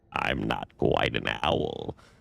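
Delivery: very deep, very slow, drawn-out creature voice. Reading a story aloud, voicing a creature in an owl carving: low voice. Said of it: "Its voice was low".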